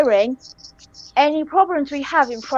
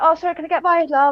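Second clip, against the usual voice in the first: friendly, polite manner; 2 semitones higher than usual. Retelling how to squeeze past people in a shop: imitating own friendly politeness. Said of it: "I tend to be very friendly to people".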